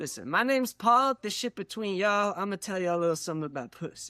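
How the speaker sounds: smooth, easy guy voice, sliding into it.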